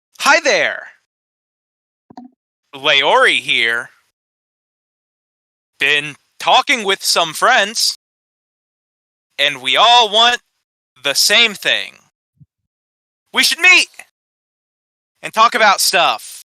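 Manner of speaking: high, cheery voice, holding onto each word. Voicing a telepathic message from Leori: cheerful voice, holding on words. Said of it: "A familiar, cheerful voice".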